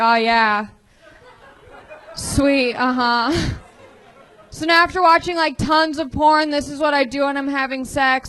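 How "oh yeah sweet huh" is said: slow, flat, deadpan monotone bedroom voice. Retelling how flat lines sound in the bedroom: imitating own monotone voice. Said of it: "a monotone voice".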